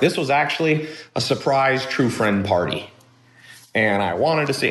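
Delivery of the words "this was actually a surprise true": ordinary delivery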